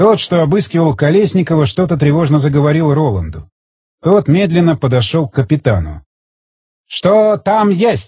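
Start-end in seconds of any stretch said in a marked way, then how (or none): 6.9-8.1 each syllable pronounced separately, halting. A storm lieutenant forces out a question to the foreign soldiers, syllable by syllable. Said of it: "По слогам выдавил".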